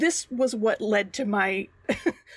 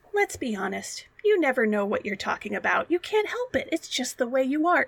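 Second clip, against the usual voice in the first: mock kindly, gentle, consoling and comforting tone; 3 semitones higher than usual. Acting out Red with an arm round Wembley's shoulder: imitating Red speaking gently. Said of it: "she tries to do it very gently".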